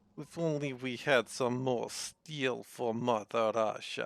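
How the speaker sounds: playful put-on Russian accent. Speaker slips into a fake russian accent mid-talk. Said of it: "I'm doing a fake Russian accent".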